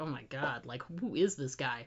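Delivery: mock under-the-breath mutter. Recapping a scene, voicing a woman's remark about a man, retelling a muttered aside. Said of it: "like these little things under her breath".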